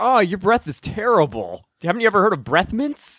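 ordinary delivery

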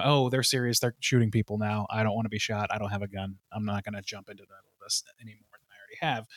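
soft, fading, frightened murmur.

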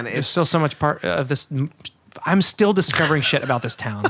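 stammering, stuttering, tripping over words, halting restart. Chatting casually with another person, the speaker keeps stuttering. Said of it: "I'm like stuttering".

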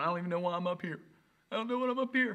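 play-acted tearful, weeping, crying voice. Speaker acting out adults who came up crying and confessing, imitating someone crying.

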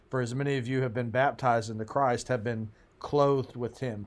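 ordinary delivery

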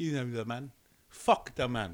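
poorly done put-on British accent. Summing up the punk attitude as a joke quote: attempted British accent, sounded Nigerian-ish. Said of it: "I sounded, like, Nigerian-ish earlier".

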